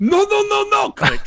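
very high-pitched, very loud, put-on French accent. Retell what everybody heard before he clicked off, in a very good French accent. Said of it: "that was a very good French accent or impression".

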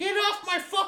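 put-on very high-pitched, grumpy, cranky old-man voice. Speaker jokes that they sound like an old man with a cane, grumpy old man voice. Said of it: "I sound like a fucking old grumpy dude with just my little cane".

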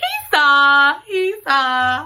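very slow, stretched braying donkey drawl. Repeating that he saw, twice: sounding like a donkey. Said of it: "I sound like a real donkey".

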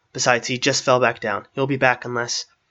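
ordinary delivery

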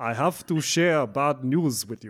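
clumsy, very bad, fake Russian accent. Reading an email's opening lines aloud, in a very bad russian accent. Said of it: "Very bad Russian".

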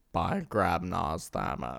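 grand, stagey, actorly theatrical delivery. Redoing a movie line the other way, in an Alan Rickman voice. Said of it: "You gotta do the Alan Rickman".

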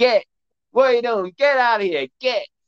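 put-on shouting. Retelling a video where a woman shouts at a bear on her deck, retelling a woman shouting. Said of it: "the woman is just shouting".

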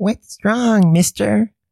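put-on sinister, creepy children's voice. Acting out the sinister children from the story: sinister children's voice. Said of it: "I like the sinister children".

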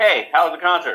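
high, loud, yelled call. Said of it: "yells over to me".

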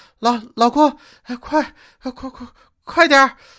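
loud, gasping between words, heavy panting, breathless. Retelling what the speaker's wife, up ahead, said to him: imitating heavy panting. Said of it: "同样用喘着粗气的声音跟我说".

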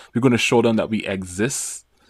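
usual speaking voice

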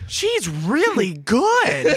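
put-on very high, sing-song, hammy child-actor voice. Quoting a line to a laughing friend, in a mid-2000s child actor voice. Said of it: "You do that so well".

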